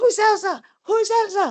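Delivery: very high-pitched, overblown, overreacting outburst. Retelling seeing a name on her husband's phone, acting out her past overreaction. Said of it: "And I overreacted".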